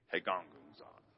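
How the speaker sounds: very low, very quiet muttered grumbling. Leading a group to say a word together: grumbling. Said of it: "you can say it in a grumbling way".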